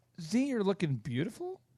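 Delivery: "beautiful" with rising, questioning intonation. Showing how the same words change meaning: rising questioning tone.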